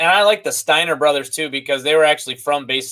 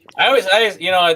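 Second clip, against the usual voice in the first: plain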